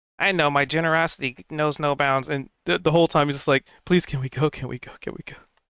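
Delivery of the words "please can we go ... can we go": slightly panicked tone. Voicing a character who keeps asking the group to leave: a little panicked. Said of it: "A little panicked".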